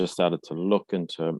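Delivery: ordinary talk, nothing marked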